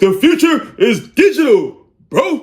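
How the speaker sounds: puffed-up boast, very slow. Mimicking people acting like tech board members: mock-boastful, said with the chest. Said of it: "They say it with the chest, too".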